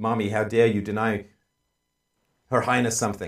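indignant, royally affronted, entitled anger. Voicing what a screeching baby seems to say: imitating an entitled, angry baby. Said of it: "entitlement and anger out of that".

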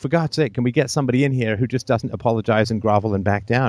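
plain

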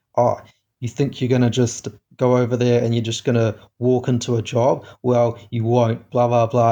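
ordinary talk

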